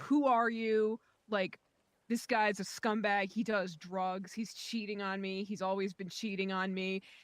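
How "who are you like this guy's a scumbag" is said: ordinary delivery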